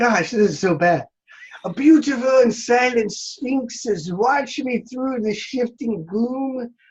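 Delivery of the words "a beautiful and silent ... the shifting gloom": put-on Irish accent, pitched up. Reading verse aloud for judge Keith, Irish accent. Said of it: "we have to do this in an Irish accent".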